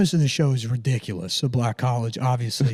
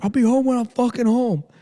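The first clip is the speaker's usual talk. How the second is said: shrill, very high-pitched screamed delivery; 10 semitones higher than usual. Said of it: "walking around just screaming on".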